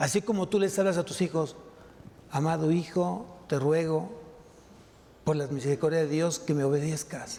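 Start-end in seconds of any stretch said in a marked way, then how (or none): 2.3-7.4 tender, low, gentle and loving tone. Showing how one speaks to one's children: loving, soft, low tone. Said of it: "un tono amoroso, un tono bajo, un tono suave ... Con ese tono, con amor".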